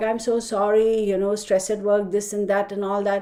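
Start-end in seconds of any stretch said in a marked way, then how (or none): none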